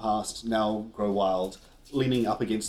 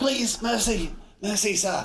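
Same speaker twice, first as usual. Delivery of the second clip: put-on gasping child voice, much higher pitch; 11 semitones higher than usual. Game narrator voicing a kid caught in a tree, gasping kid voice. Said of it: "he gasps".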